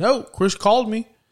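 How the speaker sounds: goofy put-on Southern accent. Retelling what Austin said when asked how it happened: stupid Southern voice imitating Austin. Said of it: "I'm doing stupid Southern voice".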